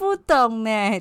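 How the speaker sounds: loud, taunting, mocking, sarcastic tone. Coaching a partner on how to say the last line, sarcastic. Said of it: "你应该要嘲讽一点。".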